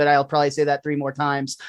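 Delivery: ordinary delivery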